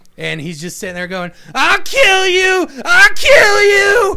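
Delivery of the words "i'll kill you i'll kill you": shrill, drawn-out, very high, very loud scream. Retelling a movie scene where a wounded goon repeats himself: imitating someone screaming.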